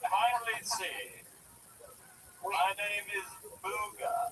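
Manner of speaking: put-on caveman voice with a British accent. Introducing a caveman character to Tony, in the Booga caveman voice. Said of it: "It's a caveman with a British accent".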